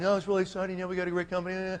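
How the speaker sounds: soft, level, unchanging flat monotone. Recounting how Jeff spoke when he was dressed down, in a flat monotone. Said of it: "it's monotone".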